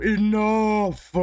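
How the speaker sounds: thundering booming voice. Narrating a scene where a voice calls out: booming voice. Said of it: "You hear a booming voice go".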